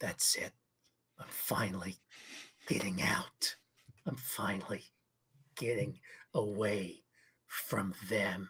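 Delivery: very low, slow mutter under the breath. Voicing a character with clenched fists: saying under his breath. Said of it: "and say under his breath".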